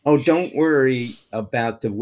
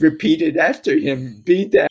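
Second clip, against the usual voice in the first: normal talking voice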